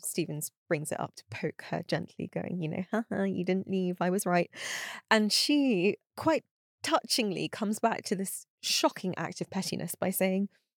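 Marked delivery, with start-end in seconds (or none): none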